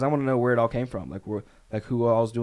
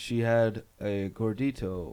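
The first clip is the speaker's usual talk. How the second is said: very slow, totally flat monotone; 4 dB quieter than usual. Retelling what was said about a list: Johnny Depp monotone voice. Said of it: "Johnny Depp in his monotone voice".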